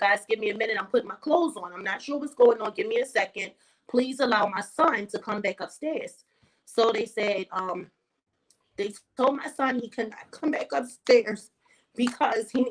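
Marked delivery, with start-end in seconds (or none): none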